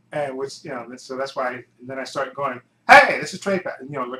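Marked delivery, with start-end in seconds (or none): 2.9-3.7 very loud, pitched-up shouting. Recalling how they used to open their videos, retelling a shouted intro. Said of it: "basically like shouting it out".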